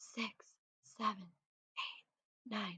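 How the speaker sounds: very quiet, soft whisper. Showing learners the counting game, whispering the finger counts. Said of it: "count all of the fingers in a whisper".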